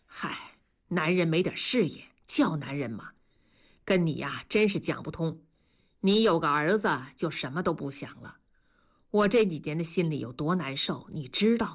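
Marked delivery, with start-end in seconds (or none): none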